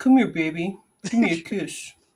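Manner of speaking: flirty, sweet-talking, coaxing put-on giraffe voice. Voicing a giraffe leaning in for a kiss: giraffe voice. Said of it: "It's my giraffe voice".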